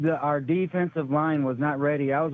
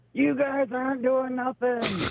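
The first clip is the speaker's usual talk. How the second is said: very high, drawn-out, heckling scream; 9 semitones higher than usual. Retelling what a daughter screamed during the game: imitating someone screaming. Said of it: "she's screaming".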